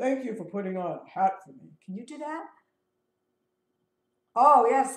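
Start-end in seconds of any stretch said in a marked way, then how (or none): 0.0-1.7 talking like a dog. Showing the audience what they would say in a dog voice. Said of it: "i would have to say in a dog voice".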